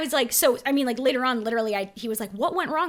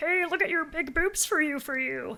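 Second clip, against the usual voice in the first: blunt delivery in a man's voice; 4 semitones higher, 4 dB quieter than usual. Speaker retells what a man said to them, imitating the man. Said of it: "That's my imitation".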